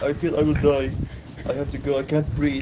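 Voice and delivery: contemptuous, sneering mock voice, high and slow. Mimicking her complaint about feeling she would die, mocking imitation of her. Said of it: "Making fun of her".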